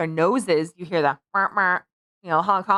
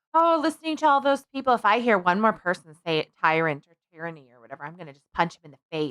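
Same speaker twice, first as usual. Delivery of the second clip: ordinary delivery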